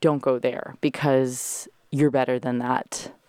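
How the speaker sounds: usual speaking voice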